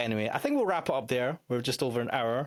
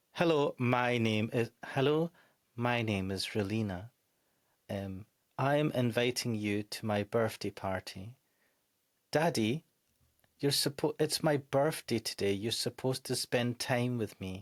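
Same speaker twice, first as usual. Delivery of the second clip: lifeless deadpan reading in flat monotone. Complaining about a character's voice acting, the speaker imitates her, monotone voice. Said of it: "her monotonous voice acting".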